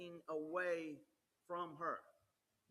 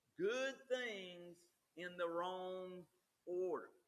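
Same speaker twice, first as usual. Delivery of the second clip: normal talking voice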